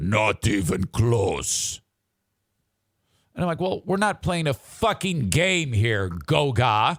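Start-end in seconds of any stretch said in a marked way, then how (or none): 0.0-1.8 extremely deep, deepest possible bass voice. Retelling the reply to his name pronunciation, in a very deep voice. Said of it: "Deep as shit voice".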